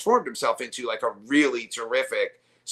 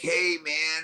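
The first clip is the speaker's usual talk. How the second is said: casual, relaxed put-on voice; 4 semitones higher, 4 dB quieter than usual. Retelling a friend greeting a bandmate: Fred impression. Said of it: "that's my Fred impression".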